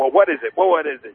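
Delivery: normal talking voice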